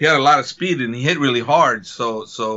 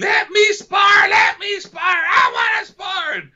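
very high, drawn-out tantrum-like yelling; 3 dB louder than usual. Act out a fighter throwing a tantrum because he wanted to spar, imitating someone yelling. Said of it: "he's yelling at me".

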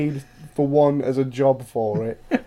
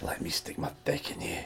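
whispered, hushed Scottish accent; 10 semitones lower, 14 dB quieter than usual. Trying a scottish whisper again on a second attempt; scottish accent whisper. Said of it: "You have got a good Scottish whisper going".

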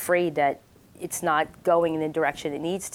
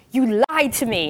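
put-on wild Israeli accent, higher and louder; 6 semitones higher, 5 dB louder than usual. Retelling how Leor caught the speaker working on an itinerary, imitating Leor's crazy Israeli accent. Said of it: "Leor has a crazy Israeli accent".

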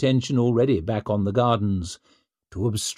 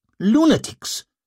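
very high, sharp, biting snapped words; 12 semitones higher than usual. Narrator voicing a character cutting in at a crowded table: snapped. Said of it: "snapped Hoff".

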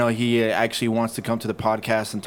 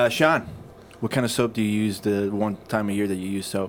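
usual speaking voice

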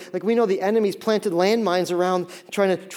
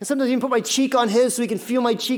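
ordinary talk, nothing marked

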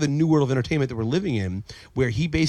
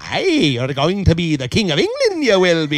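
sing-song wizard voice with swooping pitch; 3 semitones higher, 7 dB louder than usual. Talking about the movie Excalibur, the speaker does a Merlin impression. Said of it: "That was a passable impression of Merlin".

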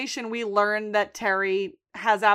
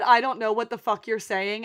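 normal talking voice

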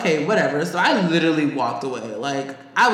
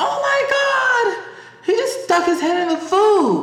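very high, slow scream with the word my drawn out; 3 dB louder than usual. A worker retells a guest screaming in front of the manager, imitating her scream. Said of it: "And she screams".

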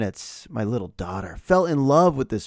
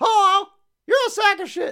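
put-on parrot voice. Host voices a fictional parrot talking back to him: Dexter parrot voice. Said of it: "my parrot impression".

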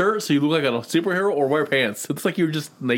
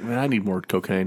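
put-on, lower, couldn't-care-less voice; 7 semitones lower than usual. Voicing a wrestler who looks like he couldn't care less: imitating Jeff not caring. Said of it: "Jeff looks like he couldn't care less".

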